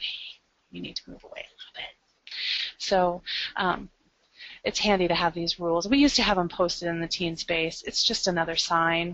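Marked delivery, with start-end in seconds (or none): 0.0-1.9 very soft, hushed whisper. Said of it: "It's just kind of quiet".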